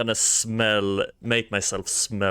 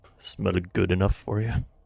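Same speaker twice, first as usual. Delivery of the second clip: whispered speech. Whispering in a stranger's ear while being searched: whispering in his ear. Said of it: "I'm gonna whisper in his ear".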